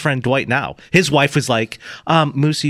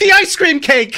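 acted dismayed outburst, pitched very high; 4 dB louder than usual. Retelling a friend crying out from his room at night: imitating a disappointed shout. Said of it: "I hear him out loud go".

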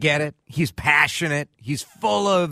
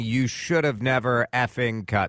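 plain

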